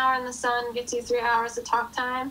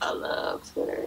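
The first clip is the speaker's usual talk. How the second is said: put-on low deep voice, breathy and half-whispered; 4 dB quieter than usual. Imagining being asked about Twitter on the show, speaker answers in a put-on deep voice. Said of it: "Why did you get the deep voice?".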